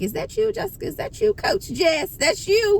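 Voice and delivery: high-pitched amazed squeal.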